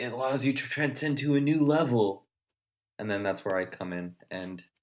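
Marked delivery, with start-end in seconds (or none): 0.0-2.3 put-on elderly voice of a sixty-year-old, raised pitch. Joking about giving advice to grandkids, put-on old person voice. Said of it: "is that how you're gonna sound when you're sixty".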